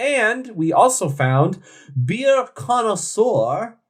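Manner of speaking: put-on failed French accent. Naming a beer review site while listing ratings: bad French accent. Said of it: "That is not a French accent".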